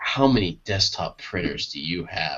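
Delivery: mock whispering voice. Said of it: "just the whispering".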